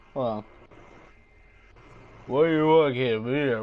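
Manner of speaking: loud put-on thug voice. Joking about doing celebrity impressions, done as a Sylvester Stallone impression. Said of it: "I feel like giving um one of these thugs a Sylvester Stallone impression".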